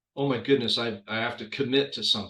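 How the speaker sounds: normal talking voice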